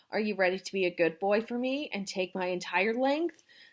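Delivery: ordinary delivery, nothing marked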